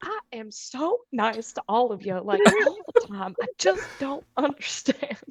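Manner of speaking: aggrieved, grumbling complaint. Imagining Dad leaving the room, imitating him muttering under his breath. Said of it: "just under his breath be like".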